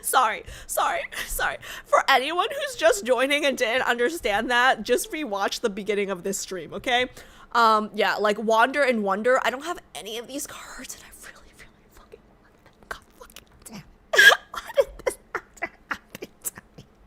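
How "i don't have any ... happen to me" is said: fast, upset, emotional, frustrated ranting outburst. Streamer talking to viewers on stream, emotional and upset. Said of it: "So emotional".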